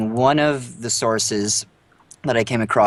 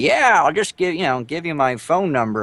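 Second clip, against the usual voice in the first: put-on crotchety old man voice, pitched up; 6 semitones higher than usual. Playing Martin Scorsese telling an aspiring film director: Martin Scorsese impression. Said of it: "this is my old man voice".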